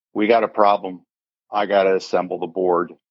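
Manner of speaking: ordinary delivery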